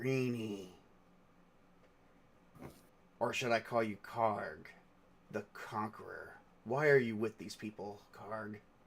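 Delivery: very hushed, quiet, menacing, sinister villain voice. A voice in a player's head speaks to Karg, in an evil, sinister voice. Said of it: "this is a different voice, more evil and sinister".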